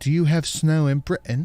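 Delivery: put-on British accent. Speaker asks a question, drawing the other's objection: British accent. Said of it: "Don't say it like that".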